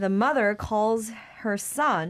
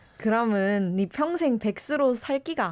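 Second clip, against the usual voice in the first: Korean spoken in Busan dialect. Asked to give it a try, speaking a line in busan dialect. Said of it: "So the first one is Busan dialect".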